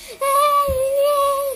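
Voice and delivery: high-pitched, loud scream.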